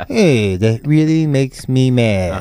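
droopy, hangdog cartoon hound voice. Remembering how a man talked, the speaker does a Droopy Dog voice. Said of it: "you know how Droopy Dog talks like this".

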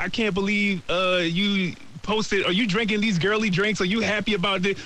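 usual speaking voice

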